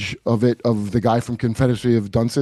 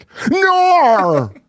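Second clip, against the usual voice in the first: put-on Australian accent, very high and drawn out; 4 dB louder than usual. Imagining shooting Australians with less-than-lethal ammunition, an Australian accent noise. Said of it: "hear the Australian noise they make".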